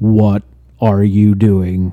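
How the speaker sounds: very loud, booming, slow, deliberate dad voice. Retelling how he reacts to trouble in his chat: imitating a super dad voice. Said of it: "super dad voice on everybody".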